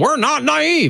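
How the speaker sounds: put-on, very high, petulant barked delivery. Speaker recounts a man snapping at a doubtful room, imitating a petulant bark. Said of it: "He barked at the room".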